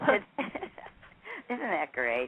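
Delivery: high, swooping speech through laughter. Reacting to a son's lasting fear of birds, laughing while talking. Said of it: "Excuse me for laughing".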